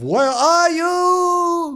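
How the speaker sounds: put-on high-pitched shout in a Dutch accent. Retelling what a man shouted while looking for him, in a retold Dutch-accented shout. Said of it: "he shouts in his Dutch accent".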